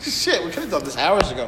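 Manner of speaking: laughing through the words.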